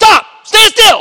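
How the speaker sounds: very loud, high-pitched angry yell. Speaker retelling a father's command to his child, retelling a loud angry shout. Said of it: "in a very loud voice, kind of an angry voice".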